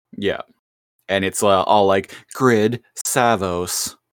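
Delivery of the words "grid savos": seductive, sexy, synthetic computer AI machine voice. Retelling what the computer says in a cartoon: sexy computer voice. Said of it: "with the sexy computer voice".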